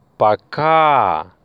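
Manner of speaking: пока with stress on the second, final syllable.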